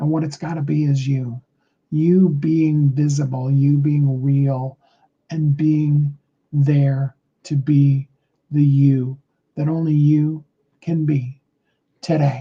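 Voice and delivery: deliberately very slow pacing. Addressing listeners directly, saying it very slowly on purpose. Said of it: "I said that very slowly on purpose".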